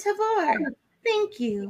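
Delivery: very high, very soft, hushed creepy cartoon voice. A host thanks the sponsor after an ad; creepy cartoon voice. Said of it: "that's a little creepy cartoon voice".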